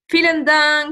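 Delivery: normal talking voice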